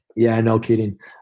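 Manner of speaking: usual speaking voice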